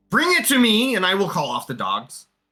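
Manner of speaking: grating, piercing voice. Narrating the scene, the speaker voices a character in a shrill, annoying voice. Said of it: "You hear in the shrill, annoying voice".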